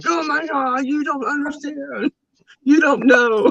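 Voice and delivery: very high, tearful bawling. Retelling the moment a player returned to the team: imitating own bawling. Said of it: "And I'm just, like, bawling".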